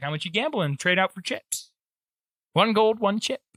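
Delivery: high, put-on woman's voice. Voicing a woman who greets the players at a gambling hall: voicing a woman character. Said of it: "That's not the woman, that's me".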